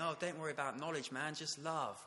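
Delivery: clumsy, half-hearted, laid-back put-on hippie voice. Giving a talk, mimicking a view he rejects, bad hippie impression. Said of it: "I don't do a very good hippie impression".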